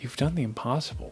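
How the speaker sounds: whisper in character voice. Voicing Willow, who walks up to Thad at the mall: whispering. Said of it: "she whispers into you".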